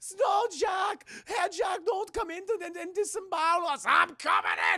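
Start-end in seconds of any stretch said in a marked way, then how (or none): 0.2-3.8 very high-pitched, put-on German accent. Retelling a scene, voicing the little pigs, in a put-on German accent. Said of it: "I don't know why they have German accents".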